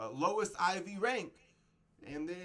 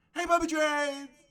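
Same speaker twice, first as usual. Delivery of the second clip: excited voice, higher and louder; 10 semitones higher, 6 dB louder than usual. Opening a video and greeting viewers: excited voice. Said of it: "I hope you can hear it in my voice".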